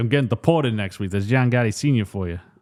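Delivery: put-on mobster voice. Retelling a movie scene where a mobster walks in: imitating a mobster. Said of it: "he's like".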